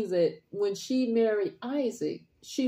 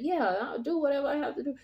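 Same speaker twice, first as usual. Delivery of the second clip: put-on kind, obliging, gracious tone; 6 semitones higher than usual. Retelling how she answered the request: imitating a gracious, kind voice. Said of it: "voice where she was gracious and kind".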